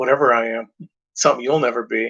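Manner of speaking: smug, self-satisfied, dismissive, scoffing tone. Retelling a movie scene where Rick answers Angus: imitating Rick smugly scoffing. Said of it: "Rick kinda smugly scoffs".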